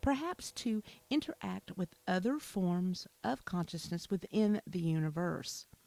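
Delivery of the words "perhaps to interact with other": plain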